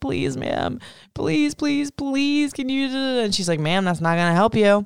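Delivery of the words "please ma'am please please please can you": put-on, high, tearful whimpering like a crying toddler. Retelling begging at the desk after being taken off the list, retelling crying like a toddler. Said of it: "I'm literally crying like a toddler".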